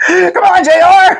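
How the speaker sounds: very high, loud wrestling-announcer whoops.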